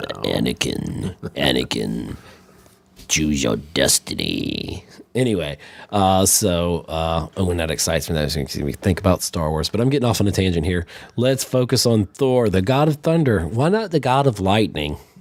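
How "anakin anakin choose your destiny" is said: very low, dark, creaky voice, slow and rough. Recovering from the flu with a sore throat, doing the deep, dark Emperor voice. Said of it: "So I have the emperor voice".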